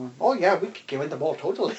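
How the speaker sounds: put-on weird half-German, half-Austrian accent. Imagining the couple's kids listening to this podcast, half german half austrian accent. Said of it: "I don't know what accent that was".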